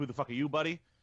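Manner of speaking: ordinary delivery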